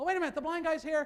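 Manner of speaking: relieved, high, loud and fast.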